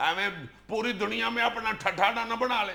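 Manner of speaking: plain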